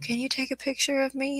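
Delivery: high, small, mousy little lady's voice. Retelling what a stranger at a rock garden asked: imitating a mousy voice. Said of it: "I hear this mousy voice from a lady go".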